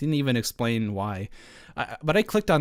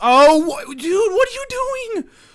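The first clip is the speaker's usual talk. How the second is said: yelling, much higher and louder; 8 dB louder than usual. Caught off guard while going through an update, the speaker yells at someone: yelling. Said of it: "so I apologize for yelling again".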